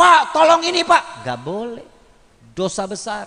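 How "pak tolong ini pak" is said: high, raised voice, lifted in tone. Showing how a wife should not address her husband, high, raised tone. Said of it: "Nada dengan tinggi".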